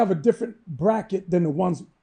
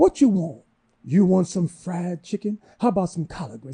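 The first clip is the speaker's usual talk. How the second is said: put-on Southern drawl. Retelling what a lady at a crowded store asked the speaker, southern drawl. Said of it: "talk with that Southern drawl".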